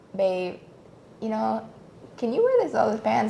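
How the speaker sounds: soft, sweet feminine voice. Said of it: "just come with your soft, feminine voice".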